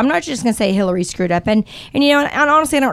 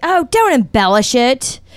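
imitated loud, heckling yell; 2 semitones higher than usual. Retelling what another dad yelled at the speaker's son, imitating a dad yelling. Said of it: "the dad next to me is yelling".

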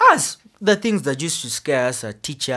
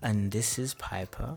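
podcast-style radio voice. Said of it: "you've got the whole podcast voice thing".

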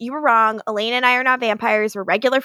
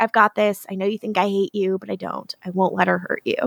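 put-on very quiet speech, lower pitch; 3 semitones lower than usual. Recapping a scene, quoting one character speaking to another, retelling a very quiet line. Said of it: "Stefan speaks very quietly so only Elena can hear him".

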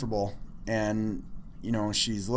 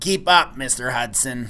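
put-on woman's voice; 5 dB louder than usual. Retelling a lady leading him through cubicles, voice like the lady on Monsters. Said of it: "She's got that voice like the lady on Monsters".

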